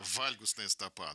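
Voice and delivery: вальгусная said slowly, stress on first syllable. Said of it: "Ровно на первый слог".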